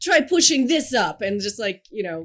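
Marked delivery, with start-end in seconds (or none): 0.0-1.2 loud, shrill, barking put-on Russian accent yell. Describing her fitness domination fantasy, she yells at a man doing push-ups: mock yell in fake Russian accent. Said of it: "yell at him in a Russian accent".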